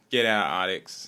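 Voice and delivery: put-on English accent. Acting out a pitch meeting where the director refuses a zombie film: Danny Boyle voice. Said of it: "is that your Boyle voice?".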